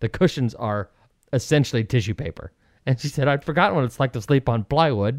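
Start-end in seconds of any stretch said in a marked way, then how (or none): none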